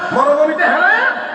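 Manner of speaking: hot-tempered, angry scolding tone.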